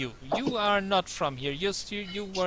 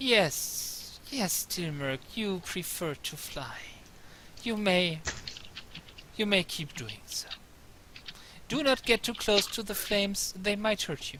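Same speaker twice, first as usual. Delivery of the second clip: put-on crackling old crone voice; 3 dB quieter than usual. Storyteller answers a player's hovering character, in Madame Eva crackling voice. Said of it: "her voice crackles like dry weed".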